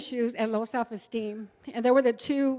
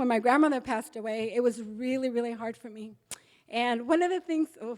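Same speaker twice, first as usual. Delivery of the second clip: voice catching, choking up on the edge of crying; 3 dB quieter than usual. Recalling when the grandmother who raised her passed away, close to tears. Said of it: "I'm gonna cry".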